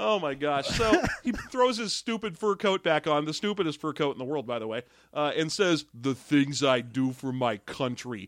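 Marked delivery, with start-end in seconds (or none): 5.9-8.3 smuggest self-satisfied delivery, low, slow drawl. Retelling a movie character's line, mock-smug voice. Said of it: "in the smuggest possible voice".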